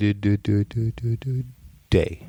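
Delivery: very slow, drawn-out delivery. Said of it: "I'm gonna do it really slow".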